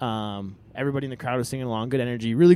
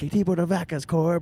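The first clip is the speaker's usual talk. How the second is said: loud, high-pitched scream; 5 semitones higher than usual. Retelling shouting a question at a show from the crowd: retelling own loud scream. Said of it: "I screamed it as loud as I could".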